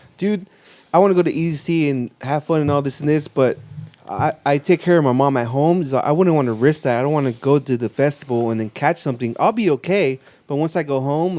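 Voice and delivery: ordinary delivery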